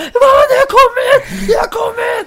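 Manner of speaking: very high, very loud, breathless joyful shriek. Retelling phoning Mom, the speaker acts out the moment: retelling a joyful scream. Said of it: "skrek så i 5 minuter och var helt anfådd".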